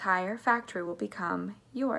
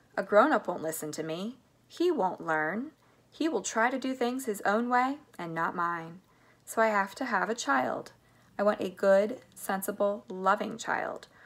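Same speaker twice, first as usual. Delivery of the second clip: ordinary delivery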